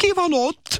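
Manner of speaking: very high, shrill shrieking scream. A woman spots a man hiding under the bed, screaming. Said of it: "A nő felsikoltott".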